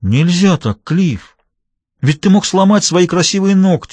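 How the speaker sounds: gentle reproachful tone. The little one, having pulled Cliff off Duffy, speaks to Cliff reproachfully. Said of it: "с упреком произнес малыш".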